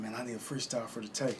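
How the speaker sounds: ordinary delivery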